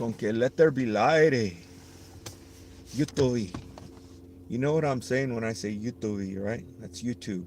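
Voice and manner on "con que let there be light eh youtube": put-on Mexican Spanish accent. Speaker remarking on a brighter room, put-on Mexican Spanish accent. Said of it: "pretending like I have a, a Spanish accent, Mexican accent".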